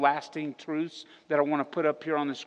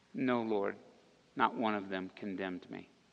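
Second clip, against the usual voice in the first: play-acted very low, timid, mortified, crushed voice; 7 semitones lower, 7 dB quieter than usual. Retelling the woman's reply to Jesus, acting out a timid, crushed voice. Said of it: "she said it with a pretty timid, crushed, mortified, embarrassed voice".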